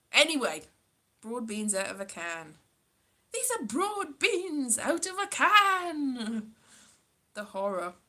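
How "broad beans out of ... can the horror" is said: bad, hard-to-place Scottish accent, "can" drawn out. Attempting an accent the speaker admits they cannot do; bad scottish accent. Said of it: "I don't know even know what this accent is".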